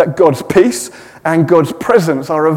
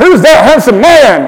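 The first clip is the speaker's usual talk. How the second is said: loud, high American accent, called out; 8 semitones higher, 8 dB louder than usual. Repeating the line on request, this time in an american accent. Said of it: "you've got to do it in an American accent".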